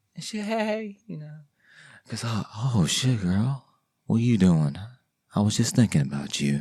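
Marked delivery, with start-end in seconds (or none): 2.3-6.7 mock deep, sultry, seductive voice. Acting out a man on the phone with a woman, the speaker uses a mock deep, sultry voice. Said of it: "The voice is all deep".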